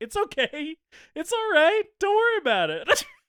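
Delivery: very high, sing-song, comforting, reassuring tone. Retelling a movie scene where the girlfriend calms a possessed boyfriend: imitating the girlfriend soothing. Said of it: "this girl just being like".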